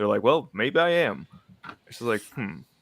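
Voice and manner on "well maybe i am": put-on, very slow drawl dripping with sarcasm.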